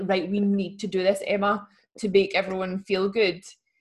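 plain

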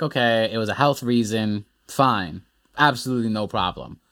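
normal talking voice

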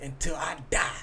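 whispered, unvoiced delivery. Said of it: "And this is what he said".

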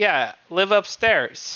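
vague, broken English. Recounting a man who spoke only vague english words, imitating broken english. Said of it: "very vague English words".

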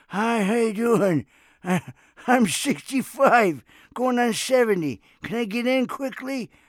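very high, loud, put-on old man voice. Acting out talking to the door guy to skip the seniors' line: put-on old man voice. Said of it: "started talking like this".

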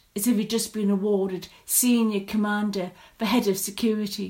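ordinary delivery

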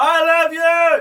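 very loud yell, pitched way up high. Showing how people shout to their love on a loud night out, shouting. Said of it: "That was really loud".

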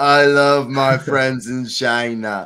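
booming, very slow, big voice. Teasing the other speaker about their phrasing: Donald Trump impression. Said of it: "You sound like Donald Trump".

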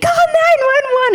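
reenacted screaming. Retelling a scare at a small Greek restaurant, acting out a scream. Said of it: "And I'm screaming".

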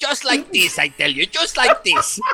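put-on Spanish accent. Asked how she would sound as Gilbert, demonstrate Gilbert with a Spanish accent. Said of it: "Gilbert with a Spanish accent".

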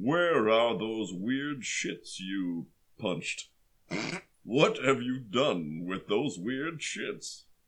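dark, menacing villain character voice. Acting out a scene where Vader answers a stormtrooper, Darth Vader voice. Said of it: "Darth Vader says".

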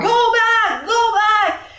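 very high, slow, drawn-out yell from afar. The game narrator voices a man running toward the players, yelling. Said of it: "you can clearly hear him yelling".

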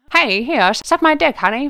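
put-on old-timey, old-fashioned character voice. Asked to do the dancer's voice, old-timey put-on voice. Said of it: "that dancer that's talking all old timey... Do the voice".

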